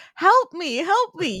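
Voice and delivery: very high-pitched, very slow, drawn-out scream. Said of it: "she's literally screaming, "Help me."".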